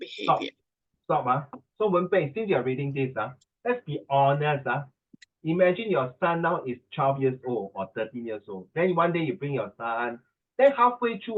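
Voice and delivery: ordinary delivery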